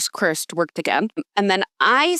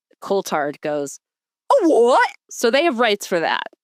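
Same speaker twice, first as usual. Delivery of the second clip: ordinary talk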